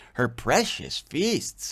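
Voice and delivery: sarcastic, derisive, mocking tone. Explaining a Bible passage while irritated by Israel's feasts: mocking tone. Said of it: "I'm mocking it".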